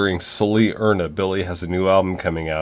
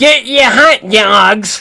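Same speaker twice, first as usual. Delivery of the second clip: put-on old man yell, higher and louder; 13 semitones higher, 9 dB louder than usual. Picturing a vendor at a wedding venue: imitating an old man yelling. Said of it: "a sixty-seven-year-old man from Long Island yelling".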